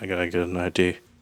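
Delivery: low, flat, dead level monotone. Describing a scene and repeating Jack's line, in Jack's flat monotone. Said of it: "He's more monotone".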